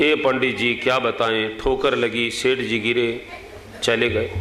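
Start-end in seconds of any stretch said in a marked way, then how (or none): none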